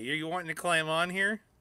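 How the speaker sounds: normal talking voice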